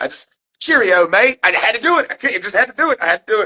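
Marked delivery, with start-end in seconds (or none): 0.6-1.4 inaccurate, put-on British accent. Saying goodbye to people from england in a mock british accent. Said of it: "I know that's not accurate".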